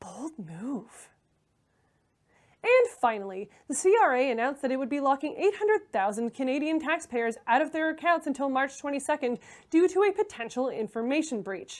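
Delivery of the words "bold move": very quiet, soft half-whisper under the breath. Imagining the mayor watching zombie movies: imitating Patrick Brown half-whispering. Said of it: "he whispers".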